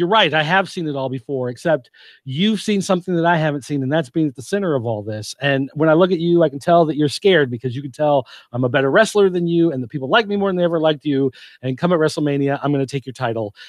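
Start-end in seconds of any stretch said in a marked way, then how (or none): none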